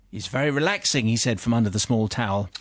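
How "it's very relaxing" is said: put-on Australian accent. Reading a story aloud, voicing the aussie client: australian accent. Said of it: "Was that your Aussie accent?".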